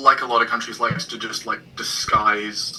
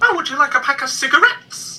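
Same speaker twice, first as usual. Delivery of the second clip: cigarettes said with odd, misplaced stress; 4 dB louder than usual. Imitating how people in a new town say it: imitating odd stress on cigarettes. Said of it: "emphasis is up here for some reason".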